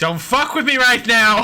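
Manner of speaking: loud, high-pitched shout. A player's character answering an unseen voice, shouting back real loud. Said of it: "Meeko says back real loud".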